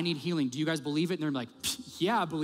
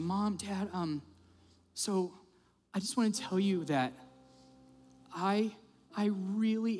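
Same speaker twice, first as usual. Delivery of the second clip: very high, tearful, crying through drawn-out words; 11 semitones higher than usual. Retelling how she spoke to Mom and Dad, imitating her crying. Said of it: "and she just starts crying".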